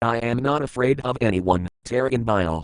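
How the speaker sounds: plain reading voice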